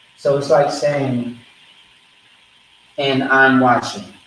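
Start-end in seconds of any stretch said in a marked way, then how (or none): none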